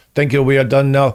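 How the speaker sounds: put-on Argentinian accent, laid on very thick. Retelling a special guest's words to fifty screaming people, in a thick Argentinian accent. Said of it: "he says in a very thick Argentinian accent".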